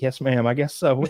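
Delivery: ordinary talk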